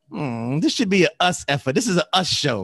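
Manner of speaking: mocking sing-song voice.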